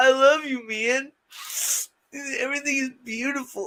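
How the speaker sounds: mock high, sentimental, emotional drunk gushing. Imitating own past self at a certain level of drunkenness: imitating own emotional drunk self. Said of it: "my emotional drunk".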